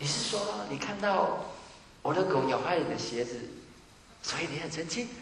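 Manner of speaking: tentative, probing, testing-the-waters delivery. Replying to someone who comes at you angrily, tentative, probing. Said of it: "所以你要用很。试探性，".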